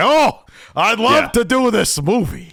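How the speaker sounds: put-on gruff, slow old-timer drawl, pitched very high. Describing how a show should have done the actor: gruff old Al Pacino voice. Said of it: "an old Al Pacino gruff".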